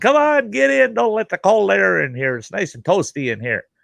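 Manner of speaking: very high, shouted yell. Retelling a driver calling a passenger into the truck: imitating someone yelling. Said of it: "he's yelling".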